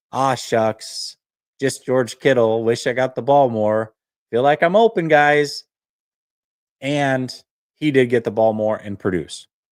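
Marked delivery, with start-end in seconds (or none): none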